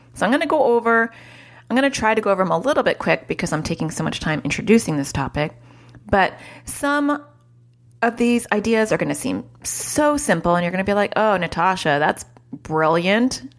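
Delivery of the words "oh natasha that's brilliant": slow, sarcastic drawl. Imitating viewers' imagined reply to simple ideas: imitating a sarcastic remark. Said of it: "being sarcastic".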